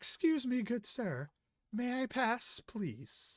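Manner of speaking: very high, slow, drawn-out woman's voice. Voicing a traveler asking to pass onto the train: voicing a woman traveler. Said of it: "you see this woman walk up behind you".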